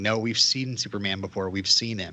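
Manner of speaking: ordinary talk, nothing marked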